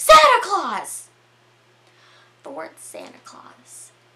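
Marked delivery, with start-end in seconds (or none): 0.0-1.1 sudden, loud, shrill shriek pitched way up. Retelling a story, the speaker acts out someone blurting a word, retelling a yell. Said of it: "Michelle just yells".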